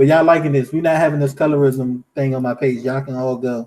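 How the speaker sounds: plain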